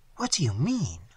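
whispered, hushed, trembling, quivering with happiness. The narrator replies to a distraught speaker lamenting their meeting; whispered, trembling with happiness. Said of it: "I whispered".

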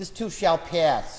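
put-on heavy Boston accent, laid on. Quoting what the speaker's dad would say, heavy Boston accent. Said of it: "with his really heavy Boston accent".

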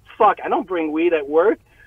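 ordinary delivery

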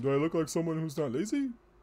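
put-on high-pitched cartoon character voice. Quoting a Futurama line, speaker does a Zoidberg impression. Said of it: "my best impression of Zoidberg".

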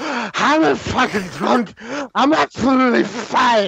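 put-on drunk voice. Imitating a drunk person insisting they are fine: imitating a drunk person. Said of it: "reference that they're drunk".

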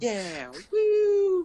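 put-on very high, enthusiastic child's cheer. Retelling what the friends said at a LAN party: imitating enthusiastic kids. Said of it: "you sound like very enthusiastic kids".

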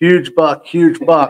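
high, slow, drawn-out scream-like call. Retelling a hunt, the speaker re-enacts spotting a buck, retelling a scream. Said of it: "I am screaming at the top of my lungs".

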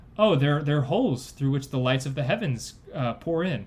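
plain

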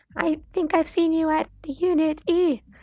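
very high, irritating voice. Narrating a story, voicing Jasmine as she talks to the narrator, annoying high-pitched voice. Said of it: "Her voice is so annoying".

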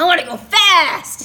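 high, loud excited squeal.

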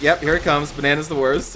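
ordinary talk

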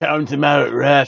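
put-on Geordie accent, spoken slowly. Retelling a wrestling match, quoting Pac in the ring: imitating Pac's Geordie accent. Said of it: "his Georgian accent".

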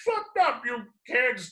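obnoxious, very high-pitched voice. Describing their role in a superhero story, playing the obnoxious neighbor voice. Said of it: "I'm this obnoxious neighbor who's like".

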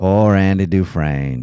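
put-on narrator voice. Playing a guessing game of impressions: Morgan Freeman voice. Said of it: "Morgan Freeman".

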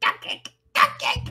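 strange, silly, breathy put-on voice, whispered. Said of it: "I don't know what that voice was".

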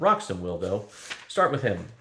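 plain reading voice

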